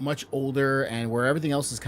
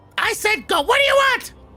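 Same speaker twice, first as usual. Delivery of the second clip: shrill, squeaky, loud elf yell; 10 dB louder than usual. In the game, a spell-cast voice answers the players in a Dobby-like voice. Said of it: "It sounded too much like Dobby".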